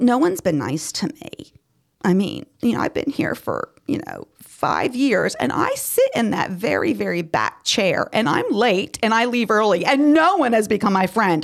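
put-on sarcastic grumbling with a drawn-out "um". Listing reasons people leave a church: sarcastic mock complaint. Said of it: "Obviously I'm being sarcastic".

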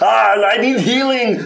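very high, drawn-out scream, acted in character. Playing a wounded character at the end of his move: screaming in character. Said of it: "he's just gonna scream at the very end".

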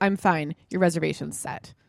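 put-on blasé, indifferent tone. Retelling own curt reply to a friend's message: retelling own blasé reply. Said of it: "so, like, blasé about the whole thing".

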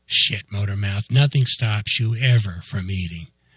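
usual speaking voice

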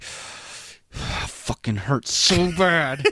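slow, strained words through clenched, gritted teeth. Retelling a sister's answer about how bad it hurt: imitating talking through gritted teeth. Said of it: "gritted teeth".

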